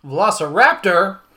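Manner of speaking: velociraptor exclaimed with excited emphasis. Showing how to say the title track name with its exclamation mark, excited emphasis on "Velociraptor". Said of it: "It like that because there's an exclamation mark".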